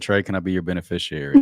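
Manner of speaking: ordinary talk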